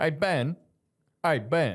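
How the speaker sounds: put-on Southern accent. Showing how people from the South say his name Ben, Southern accent. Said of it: "Bin is like the Southern Bin".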